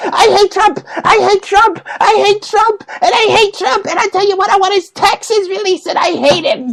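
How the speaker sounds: put-on very high, shrill, childish tantrum screaming. Mocking people who hate Trump, the speaker imitates a five-year-old screaming. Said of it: "they sound like five year old kids screaming".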